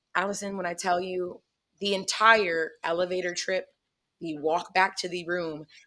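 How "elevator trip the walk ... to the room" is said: normal talking voice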